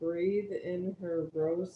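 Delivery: ordinary delivery, nothing marked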